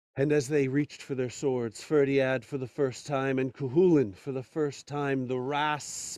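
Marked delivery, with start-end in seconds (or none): none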